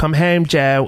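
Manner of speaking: high, horrible put-on Baltimore accent. Retelling a man at a TV press conference talking to Joe, horrible Baltimore accent. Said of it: "that horrible Baltimore voice".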